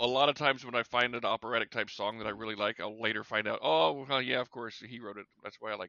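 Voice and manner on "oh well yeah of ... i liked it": normal talking voice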